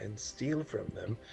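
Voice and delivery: whispering. Whispering in character to Razir while describing a show: whispering to Razir. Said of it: "and I whisper to Razir".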